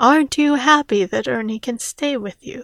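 ordinary talk

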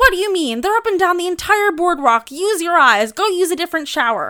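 furious, very loud, high-pitched angry yelling. Retelling how the woman at the showers yelled at her: imitating a woman angrily yelling. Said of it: "yelling at me, so angry".

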